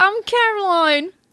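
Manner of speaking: put-on Australian accent, very high pitch. Co-host introducing herself at the show's opening, in an Australian accent.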